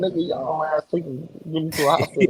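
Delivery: giggling, half-laughed words. Retelling laughing in the car after getting shot: imitating own past giggling. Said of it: "I was sorta giggling, like".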